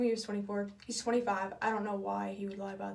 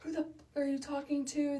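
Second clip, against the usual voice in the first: play-acted high-pitched furious flipping out; 5 semitones higher than usual. Retelling a phone call where he starts flipping out: imitating someone flipping out. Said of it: "he starts flipping out".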